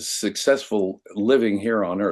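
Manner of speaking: plain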